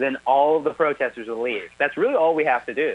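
normal talking voice

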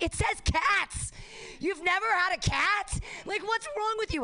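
high-pitched, acted-out heckling yell. Recalling impromptu speeches in class, the speaker re-enacts yelling from the back. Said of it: "I'm like yelling from the back".

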